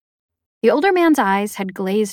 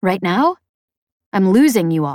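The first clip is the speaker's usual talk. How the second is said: ordinary delivery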